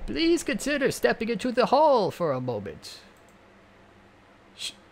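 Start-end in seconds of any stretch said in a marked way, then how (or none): 0.1-3.0 put-on very high, swooping old-teacher-style voice. Narrator voices the teacher asking Fang to step into the hall; old teacher voice. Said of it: "I'll probably just end up with that fossil of a teacher".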